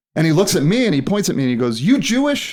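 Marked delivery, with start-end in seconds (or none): 1.8-2.6 put-on malicious tone, higher pitch. Retelling a comedian singling out an assistant: imitating Don Rickles asking maliciously. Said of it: "really maliciously, as Don would".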